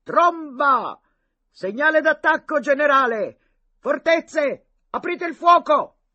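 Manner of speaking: very loud, very high ringing shout. From a hut roof, Boca shouts over the prisoners' trampling in a ringing shout. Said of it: "coprendo con la sua voce squillante".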